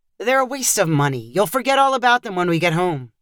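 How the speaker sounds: usual speaking voice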